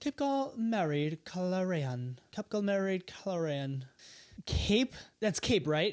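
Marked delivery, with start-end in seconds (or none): 0.0-3.8 put-on British accent. Guessing a hidden phrase aloud in a game: put-on british accent. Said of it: "You have to say it with a British accent".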